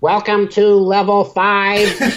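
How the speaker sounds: very high, flat, computerized robotic monotone. Retelling the elevator's announcement as the doors open, in a computerized voice. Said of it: "this fucking computerized voice goes".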